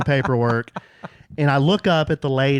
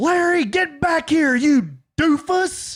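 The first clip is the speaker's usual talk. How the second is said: mock very high, drawn-out yell, carrying loudly; 13 semitones higher than usual. Retelling calling a runaway dog back in a waiting room: retelling a shout. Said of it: "at the top of my lungs".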